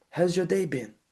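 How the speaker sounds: friendly, earnest tone. Speaker demonstrating how to open a phone call, friendly but serious tone. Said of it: "A friendly, but also serious tone".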